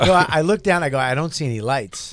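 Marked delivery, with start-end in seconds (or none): none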